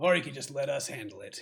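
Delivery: rough-edged gruff interjection. Narrating a hidden figure calling out from the distance, gruff voice. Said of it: "you hear a kind of a gruff voice in the distance".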